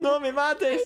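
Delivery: frantic, very high-pitched, panicked. Showing how to say a Spanish phrase from an early lesson: panicked. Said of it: "say it like in a panicked way".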